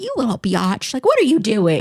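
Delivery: mock affectionate, teasing, playful scold, swooping high pitch. Describing yelling at her cat, not in a mean way: retelling yelling at her cat. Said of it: "because I'm yelling at her".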